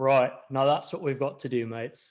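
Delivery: put-on heavy British accent. Retelling what a man told the room after finishing his work, in a thick british accent. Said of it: "with this thick British accent".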